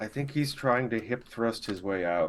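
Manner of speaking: hushed, whispered voice. Voicing Gama, who looks like he has indigestion, speaking to Igra: whispering. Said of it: "he just kinda whispers to you".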